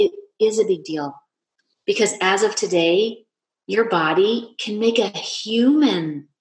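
very slow, choked-up speech with lump in throat. Retelling what was said to a daughter: retelling own choked-up speech. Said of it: "kinda choked up".

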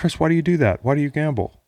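benevolent, caring voice. Speaker voicing an imagined voice in his head after losing a bet, mock-benevolent voice. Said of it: "he's like this benevolent voice in my head".

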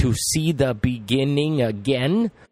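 words set off with air quotes in the voice. Telling a story, the speaker marks a phrase with air quotes in the voice. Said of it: "I hope you can hear it in my voice".

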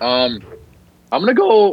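slow voice, cracking mid-phrase. A speaker announcing their next pick, voice cracking. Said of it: "little voice crack there".

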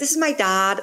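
heavily put-on, affected Irish accent. Retelling own past attempt to pick up an Irish affectation: imitating own put-on Irish accent. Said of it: "trying to pick up an Irish affectation".

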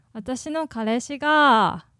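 "kareshi" with flat pitch accent, low start then high. Showing how kids these days say boyfriend: flat accent on kareshi. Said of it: "kids these days would pronounce it kareshi. That's flat accent".

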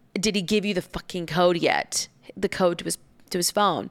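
ordinary delivery

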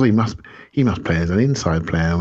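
ordinary delivery

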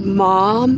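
put-on sobbing. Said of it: "and she's sobbing".

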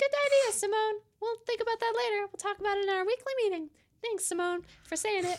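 rapid, rattled cartoon mouse character voice. Answering Simone's suggestion in someone else's voice, Mickey Mouse voice. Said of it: "Which one of us are you imitating with that voice?".

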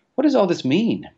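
very high, sudden cry. The Admiral sees the ships vanish and reappear among the clouds, crying out. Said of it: "cried the Admiral".

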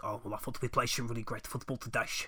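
put-on gruff Dutch accent. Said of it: "his little gruffly Dutch voice".

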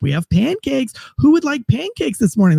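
high, coaxing female tone. Retelling how they tried to coax people out, speaker uses a female psychologist voice. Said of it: "like a female psychologist voice".

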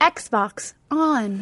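soft, gentle, polite and sweet voice. Showing how they always talk to the Xbox: sweet, nice voice. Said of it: "I try to be like sweet. I'm always like, Xbox on, like my nice voice".

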